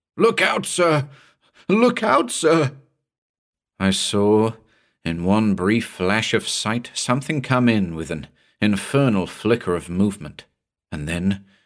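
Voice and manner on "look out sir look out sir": fearful, frightened cry, very high pitched. One of the men suddenly cries out a warning into the darkness: frightened cry. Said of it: "cried out something in a frightened voice".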